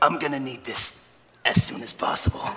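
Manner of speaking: put-on strained speech through gritted teeth. Retelling handing over a prescription while in pain, through gritted teeth. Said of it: "said through gritted teeth".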